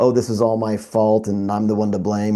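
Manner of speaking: normal talking voice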